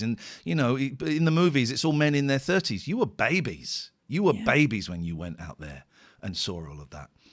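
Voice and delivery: ordinary talk, nothing marked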